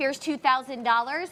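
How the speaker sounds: plain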